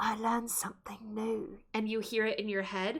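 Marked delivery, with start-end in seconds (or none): 0.0-1.6 hushed whisper. Playing a character who turns away and covers her mouth: whispering. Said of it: "covers her mouth, and whispers".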